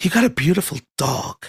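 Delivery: imitated sinister tone. Retelling what a group round candles said about the dog: imitating a sinister tone. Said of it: "said it in such a sinister way".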